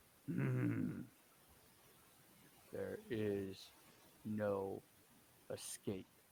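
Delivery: deep baritone voice. Narrating a figure stepping forward into the light, in a deep baritone voice. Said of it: "you hear this deep baritone voice echo out".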